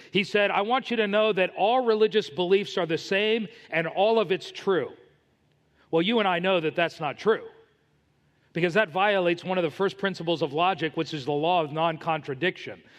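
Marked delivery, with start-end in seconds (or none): none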